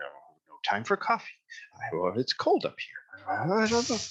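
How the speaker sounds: high-pitched grumbling mumble under the breath. A narrator voices a figure the listeners can hear approaching: grumbling under its breath. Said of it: "voice kind of grumbling and mumbling under its breath".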